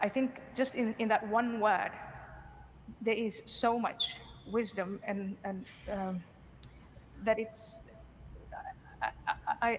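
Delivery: halting, stammering speech. Speaker reflecting on a woman's advice to pray, stuttering. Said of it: "I am stuttering and I'm staggering to say".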